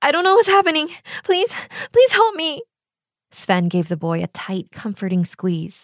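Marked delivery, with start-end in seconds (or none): 0.0-2.6 very high, rushed, frantic, terrified, desperate voice. A little boy who hears voices runs to Sven for help, crying in terror. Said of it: "the little boy cried in terror".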